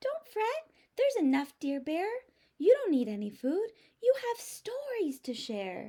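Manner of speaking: tiny, high, squeaky, swooping sing-song animal voice. A narrator reads Mouse's reply to Bear, in a squeaky Mouse voice. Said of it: "Mouse squeaks".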